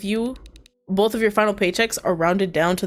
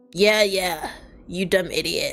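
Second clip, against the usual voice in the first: incredibly raspy, heavy, scraping voice. Narrating a story where, after hold music, a caller speaks in an incredibly raspy voice. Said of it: "an incredibly raspy voice speaks".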